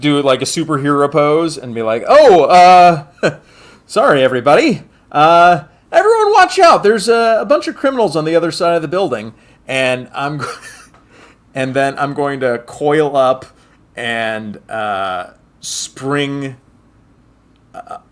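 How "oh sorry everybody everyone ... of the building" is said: very loud, fast, fumbling, awkward, stretched uhs. A player speaks in character after striking a superhero pose, awkwardly. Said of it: "Kind of awkwardly".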